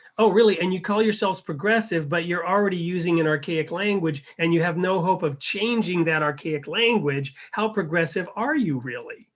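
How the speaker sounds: scornful, needling, mocking sarcastic tone. Acting out an exchange about the Guardian's death, the speaker replies: retelling a sarcastic reply. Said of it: "So so it's sarcastically".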